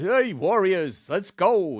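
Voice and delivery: put-on slow New York accent. Describing an actor's casting, imitating his voice: Robert Davi impression, New York accent. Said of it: "N-, New York, Brooklyn".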